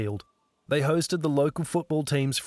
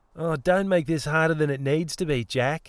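sneering, mocking delivery. [name] throws Jeanette's words right back at her, sneering. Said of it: "[name] sneered back".

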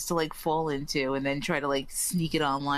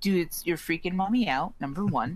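ordinary talk

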